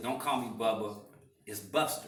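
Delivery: ordinary delivery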